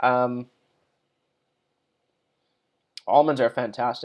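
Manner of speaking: speaking with mouth full of food, chewing. Speaker taking audience questions, talking while chewing. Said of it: "I'm sorry for chewing".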